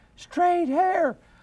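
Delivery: tiny, very high-pitched small spirit or demon voice. Speaker retelling a conversation with a demon, in its little voice. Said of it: "this little voice comes out of her mouth".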